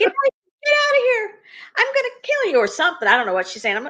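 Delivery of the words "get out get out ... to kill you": put-on, very high, frantic, shrill, loud shrieking. Retelling the night a mouse got in, the speaker imitates the mother screaming. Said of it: "she's screaming and she's saying".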